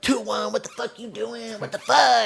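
put-on yelling. Retelling people at the tower on the radio: imitating tower yelling. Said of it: "yelling my truck number".

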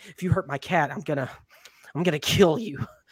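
mock-angry, put-on child voice. A father retelling his kid's threat over her cat, imitating a mad child's threat. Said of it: "She gets mad".

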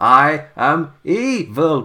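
evil spooky voice, every word chopped staccato. Describing the Halloween Havoc intros, the speaker demonstrates their delivery: spooky staccato voice. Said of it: "In staccato".

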